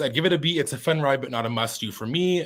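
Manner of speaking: ordinary talk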